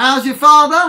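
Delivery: very loud, high cor blimey East London cockney accent. Leading a group call-and-response, using an East London cor blimey accent. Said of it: "in a nice East London core blimey accent".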